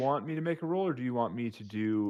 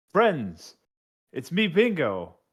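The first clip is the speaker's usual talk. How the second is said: shouting, higher in pitch and louder; 5 semitones higher, 6 dB louder than usual. Playing Bingo in a game, yelling to companions near a dragon. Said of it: "I'm gonna yell to my compatriots".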